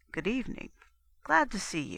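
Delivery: quiet, soft, almost gentle, mild voice. The inspector greets the narrator as he comes in, quiet and almost gentle. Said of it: "in his quiet and almost gentle voice".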